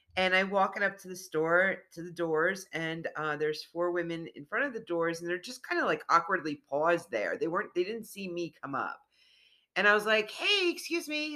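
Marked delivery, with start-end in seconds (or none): 10.3-11.4 very high-pitched, chipper put-on voice. Retelling greeting women blocking a store door: imitating own chipper greeting. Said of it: "real chipper".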